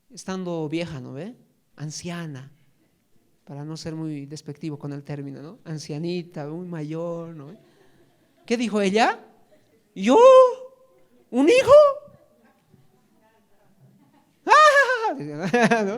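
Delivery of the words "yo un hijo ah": shrill, loud, drawn-out woman's voice, "ah" stretched. A speaker acts out Sara's reply on being told she'll have a son: Sara's voice, half high-pitched. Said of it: "Medio aguda para las mujeres".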